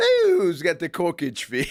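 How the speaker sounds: put-on Irish accent with swooping sing-song tune. Joining the other speaker's corkage fee joke: put-on irish accent. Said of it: "Irish accent".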